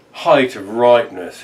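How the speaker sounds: ordinary delivery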